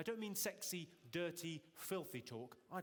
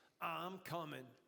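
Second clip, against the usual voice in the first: put-on seventies New York accent, sexy and smooth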